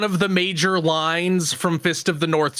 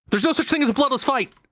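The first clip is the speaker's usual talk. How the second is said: rattled off as fast as possible, pitched up; 7 semitones higher than usual. Describing a fitness boxing game's character saying lines during combos, as fast as possible. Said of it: "Just like as fast as possible".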